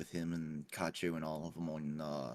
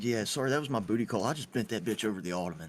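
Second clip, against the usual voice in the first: put-on nonchalant offhand tone, higher and louder; 4 semitones higher, 5 dB louder than usual. Retelling a friend returning to the game mic: imitating a friend's nonchalant tone. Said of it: "without missing a beat".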